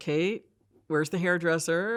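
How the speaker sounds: ordinary talk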